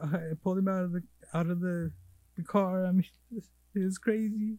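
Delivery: put-on high, weepy, sobbing, tearful voice. Retelling a man on the phone to his brother: imitating someone crying. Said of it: "on the phone crying to his brother".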